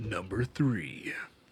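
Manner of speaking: movie announcer voice. Announcing the next list item after being asked for the movie voice. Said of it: "hit me with that movie voice".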